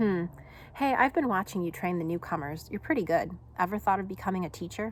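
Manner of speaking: ordinary delivery, nothing marked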